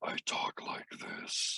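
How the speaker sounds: breathy, whispered, very deep demon voice. Asked about a tough voice, the speaker demonstrates a giant-demon voice: very deep. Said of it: "a giant demon or dragon".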